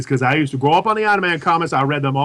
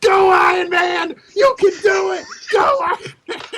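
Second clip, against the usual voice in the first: very high, stretched, drawn-out shrieking shout. Retelling a scene during the Iron Man movie: imitating someone screaming. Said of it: "He was screaming".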